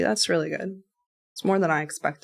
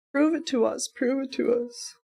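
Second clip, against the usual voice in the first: taunting, high, drawn-out jeer; 8 semitones higher than usual. Speaker mocks the person who spoke before, in a mocking imitation. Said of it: "I'm just mocking the person that was before".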